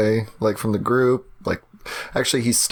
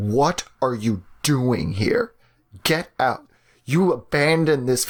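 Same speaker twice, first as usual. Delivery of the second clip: furious, heated, accusing outburst; 3 semitones higher than usual. Game master voicing her brother Richard as he sees her, screaming. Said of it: "and just screams".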